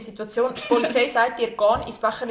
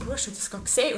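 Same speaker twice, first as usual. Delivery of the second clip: acted disbelief, much quieter; 5 dB quieter than usual. Retelling what you asked your companion after spotting a naked man, retelling own disbelief. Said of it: "retelling disbelief after seeing naked man".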